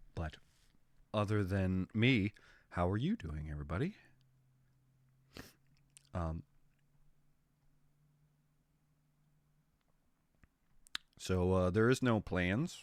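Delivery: sick, quiet, low, half-whispering voice. Greeting viewers while sick and unable to raise the voice: sick, half-whispering voice. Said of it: "I'm gonna be probably whispering a little more than usual".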